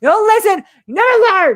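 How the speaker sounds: high, loud mock yell.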